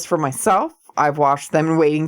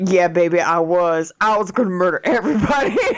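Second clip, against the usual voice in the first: usual speaking voice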